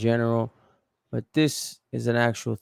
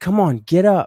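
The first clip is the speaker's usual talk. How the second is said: very loud, high, angry, urging shout; 8 semitones higher, 8 dB louder than usual. Retelling what the young lady said after he got shot: imitating an angry young lady. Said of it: "she's angry at him".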